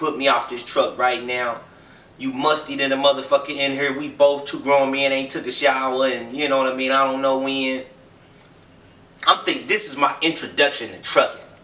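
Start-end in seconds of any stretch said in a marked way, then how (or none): none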